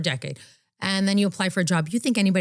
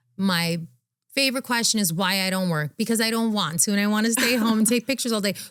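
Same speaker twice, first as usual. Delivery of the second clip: normal talking voice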